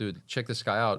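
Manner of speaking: plain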